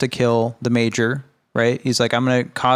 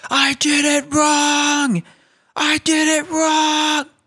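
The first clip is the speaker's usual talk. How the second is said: mock shrill, very high, drawn-out screaming. Retelling how a movie character dies: imitating Hank screaming. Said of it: "he just is screaming".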